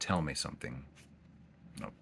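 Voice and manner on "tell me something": ordinary talk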